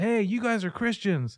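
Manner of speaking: high, loud shouted call-out. Retelling how a man on the street called out: imitating a man yelling. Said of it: "a guy who yells across the street".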